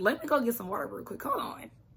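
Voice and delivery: hoarse voice. Pausing a recap to get water, raspy voice. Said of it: "this raspy voice, I am struggling".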